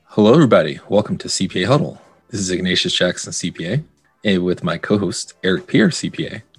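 fake seductive voice. Podcast host opens the show, introducing himself and co-host: put-on sexy voice. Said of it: "that's enough of my sexy voice".

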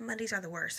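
ordinary talk

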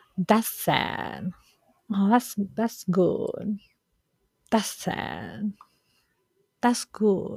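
slow, unhurried, drawn-out reactions, each stretched out.

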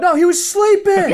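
very high, shrill shout. Retelling a cop calling across the street to firemen: imitating someone shouting. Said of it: "he shouts out".

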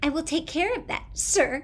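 scornful, cruel, sarcastic, high, loud voice. The speaker mocks the reply a voice just gave: cruel, sarcastic mimicry. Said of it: "Jonas mimicked in a cruel, sarcastic voice".

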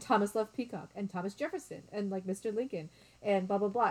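ordinary delivery

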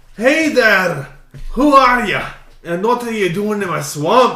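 barking gruff monster voice. Reading a story where the ogre Shrek confronts Obi-Wan Kenobi in his swamp, loud, gruff Shrek voice. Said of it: "a loud, gruff voice".

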